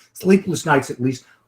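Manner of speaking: ordinary delivery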